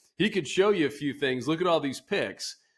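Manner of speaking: high, a little sarcastic, acted-out teasing. Retelling what a colleague from marketing said to Luke, retelling a sarcastic remark. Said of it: "a little bit sarcastically".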